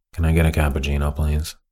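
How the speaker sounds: completely unvaried, low, flat droning monotone. Showing what Fred sounds like when he talks: Fred's monotone voice. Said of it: "He's got this really monotone voice. And this is what Fred sounds like".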